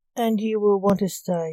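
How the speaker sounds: plain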